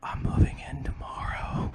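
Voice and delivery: slow, drawn-out, soft whisper. Acting out a joke scene, hugging her and saying this: acting out a whisper. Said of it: "I'm gonna whisper in her ear".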